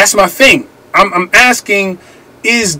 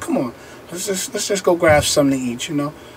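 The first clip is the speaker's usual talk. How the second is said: put-on smooth, sweet-talking romancing voice; 4 semitones lower, 11 dB quieter than usual. Retelling asking his wife out to eat: smooth romantic voice. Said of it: "I had to put my smooth voice on".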